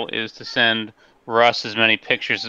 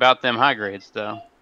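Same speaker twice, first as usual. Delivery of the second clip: normal talking voice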